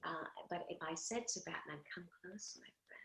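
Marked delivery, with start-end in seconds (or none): 1.9-3.0 soft, intriguing, alluring, seductive near-whisper. Demonstrating how the character would lure Batman in close, seductive voice. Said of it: "It's a very intriguing sound".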